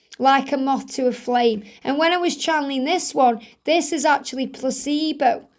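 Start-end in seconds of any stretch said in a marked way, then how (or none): none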